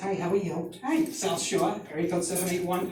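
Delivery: put-on Massachusetts South Shore Boston accent. Describing an English teacher, the speaker imitates the teacher's way of talking. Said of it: "talks like this".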